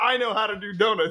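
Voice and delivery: mild, hollering yell. Telling how dad screamed at the TV over a driving clip, imitating dad screaming. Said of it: "he's the one that's screaming".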